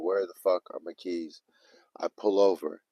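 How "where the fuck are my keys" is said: mock panicked voice, quieter. Telling a story about losing car keys, retelling own panic. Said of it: "rev up like zero to a hundred".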